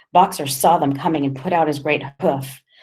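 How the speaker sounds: ordinary delivery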